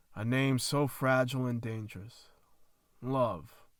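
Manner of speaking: plain reading voice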